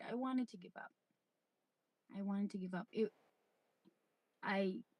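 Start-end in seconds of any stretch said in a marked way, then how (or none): 0.0-2.9 trying not to get emotional. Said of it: "I'm trying not to, trying not to, get emotional here".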